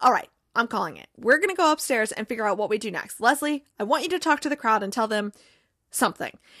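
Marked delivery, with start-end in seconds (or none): none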